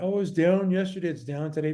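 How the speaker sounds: put-on complaining tone. Imitating people complaining about a stock's dip: imitating people complaining. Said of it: "people are complaining".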